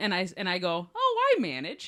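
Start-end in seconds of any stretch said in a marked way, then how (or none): 0.9-1.9 play-acted, delighted, cheery, chirpy, very high voice. Retelling own reply to a man on the phone asking for a manager, a cheerful quip. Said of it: "I thought I was being like delightful".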